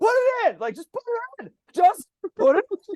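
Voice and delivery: mock coach yelling, very high and repeated. Illustrating an internal coach yelling at his elephant on the court, mock yelling. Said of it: "and I'm yelling".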